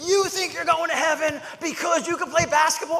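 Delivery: mock shrill, loud, high-pitched screaming. Retelling a man screaming at a kid in a Lakers jersey, retelling a man screaming. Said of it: "he just starts screaming".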